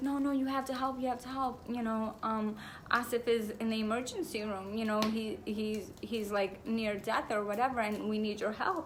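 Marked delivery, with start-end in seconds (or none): 0.0-1.6 imitated frightened woman's voice, urgent and pleading. Retelling a dream where a woman runs up begging for help; imitating a frightened woman. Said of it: "she's like so frightened".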